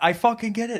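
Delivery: high-pitched, screaming outburst. Retelling a shouting match between two people, imitating one screaming back. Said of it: "And he's screaming".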